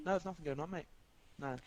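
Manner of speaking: put-on flat deadpan, rock-steady, no quiver. Imitating how Gazi denies anything is going on: imitating Gazi's stone-steady denial. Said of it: "with a voice just solid as stone".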